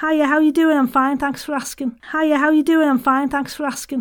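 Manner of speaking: Scouse accent playing with pitch. Talking about accents, demonstrating a Liverpool accent. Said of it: "in the Liverpoolians".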